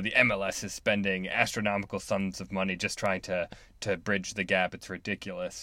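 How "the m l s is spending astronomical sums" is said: plain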